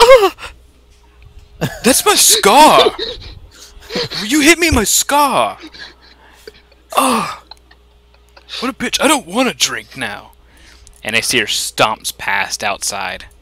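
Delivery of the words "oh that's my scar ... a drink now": very high, shrill, swooping angry ranting outburst. The narrator voices Isia after she is hit in her scar: Isia's angry outburst. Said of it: "and Isia goes".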